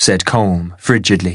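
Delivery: ordinary delivery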